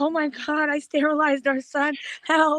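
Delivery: mock crying. Retelling a panicked call to Frank after a child's injury: retelling own crying call.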